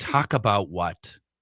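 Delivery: acted, fed-up, exasperated woman's voice. Retelling what a woman's voice on a recording said: imitating an exasperated woman. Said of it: "you get this exasperated woman. It's like".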